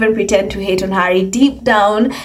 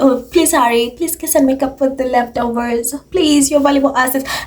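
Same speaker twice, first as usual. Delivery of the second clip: groveling, fawning, pleading, begging tone; 4 semitones higher than usual. Imitating the others begging for Harry: imitating begging. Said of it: "constantly begging for Harry".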